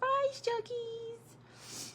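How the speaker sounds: put-on sweet, soft, tiny, very high little-child voice. Tearing up recalling her baby saying goodbye, imitate his sweet little voice. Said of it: "His sweet little voice".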